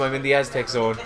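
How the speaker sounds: ordinary delivery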